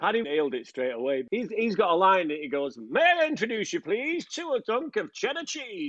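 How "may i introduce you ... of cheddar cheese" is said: put-on upper-class posh voice, high and sing-song. Quoting a line someone delivered during recording, in a posh voice. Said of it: "And he did it in a posh voice".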